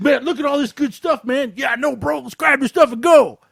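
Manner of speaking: high, loud, cheesy movie thug voice. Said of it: "This is how they're talking".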